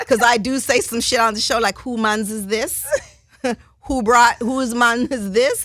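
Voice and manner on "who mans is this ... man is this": put-on Jamaican-accented speech. Speaker quotes something she says on the show, in a Jamaican accent. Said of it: "Jamaican accent".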